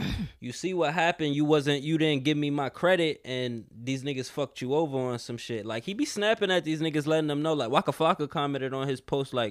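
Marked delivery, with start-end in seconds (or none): none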